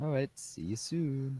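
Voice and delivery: high, weird, odd, playful jokey tone. A player answers as a departing character walks away; weird joking voice. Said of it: "your voice changed to this weird weird way of talking".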